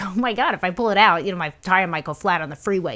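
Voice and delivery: ordinary talk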